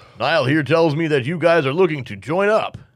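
big, loud, booming voice of a large man. Voicing a large man as he greets the guests, booming voice. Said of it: "booming voice".

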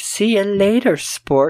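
high, slow, feminine robot voice. Retelling a movie scene, quoting the robot: imitating a girl robot voice. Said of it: "the robot has a girl voice".

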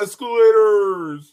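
put-on cartoon character voice, loud and high. Doing an impersonation just for the people watching: Patrick Star impression. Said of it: "I so badly wanna do my impersonation".

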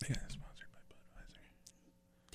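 slow, loud, carrying stage whisper. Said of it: "I was whispering that so loud".

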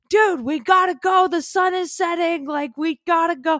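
very high, shrill, carrying scream, acted. Retelling calling into tunnels for a friend: imitating own screaming. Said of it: "screaming into the tunnels".

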